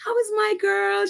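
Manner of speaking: small, high-pitched, creaky voice. Retelling a line heard in a video, imitating Mama Doria's little voice. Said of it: "her little voice, it was so beautiful".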